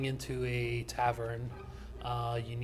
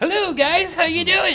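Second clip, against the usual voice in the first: silly put-on voice, very high and very loud; 16 dB louder than usual. Demonstrating step one of voice practice, a funny voice: funny voice, not own. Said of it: "so make it sound not like me".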